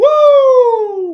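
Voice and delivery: bad, very high, very loud, long drawn-out woo. Calling a baseball at-bat, the announcer lets out a bad Ric Flair woo. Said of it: "That was a bad Ric Flair".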